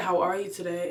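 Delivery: normal talking voice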